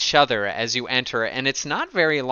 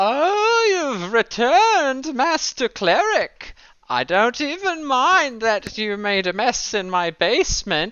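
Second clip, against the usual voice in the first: drooling, very high, drawn-out "oh"; 11 semitones higher than usual. Storyteller voicing Maida as she turns to Master Cleric, speaking droolingly. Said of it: "Maida droolingly turns towards you and says".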